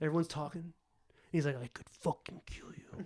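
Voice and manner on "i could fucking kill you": whispered, barely audible, very quiet and breathy. Retelling a film dinner scene, quoting a diner: very quiet. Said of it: "He says it very, very quietly".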